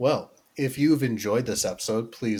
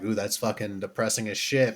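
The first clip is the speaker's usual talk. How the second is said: ordinary talk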